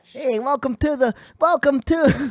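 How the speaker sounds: squeezed high and cartoonish. Showing how you would have to talk forever, open the podcast like Daffy Duck and Adam Sandler combined. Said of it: "you sound like Daffy Duck and Adam Sandler combined".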